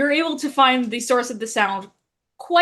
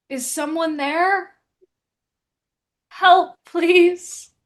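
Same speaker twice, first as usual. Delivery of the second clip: faint, raspy, hoarse, weak voice; 4 semitones higher, 4 dB louder than usual. Narrator voices an unseen stranger the player character hears; hoarse, weak voice. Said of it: "you hear a hoarse, weak voice".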